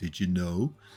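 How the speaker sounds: flat, bored, uninterested, level monotone. Showing how he says it in the videos, in a mock-uninterested voice. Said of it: "he does it in the most uninteresting, vo- uninterested voice".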